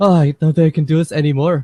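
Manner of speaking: put-on breathless voice. Describing a tired speedster in a film: imitating Quicksilver catching his breath. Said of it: "catching his breath".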